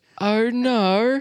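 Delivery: put-on English accent, very high and drawn out. Trying to say a word so it sounds right, in an English accent. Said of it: "speak in an English accent first".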